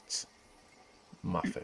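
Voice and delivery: whispered, hushed, breathy, grand and regal delivery. Imitating how someone says the name when he gets regal: imitating a regal way of speaking. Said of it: "you know how he gets all regal".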